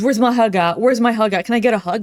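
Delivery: insistent, pushy, creepy guy voice. Mocking someone by acting as a creepy guy without boundaries: mocking a creepy guy. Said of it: "that creepy guy that doesn't know boundaries".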